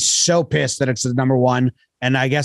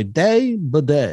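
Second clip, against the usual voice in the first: put-on elderly man's voice. Showing the line shared with a friend for fifteen years: old man voice. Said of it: "we will just do the old man voice and say".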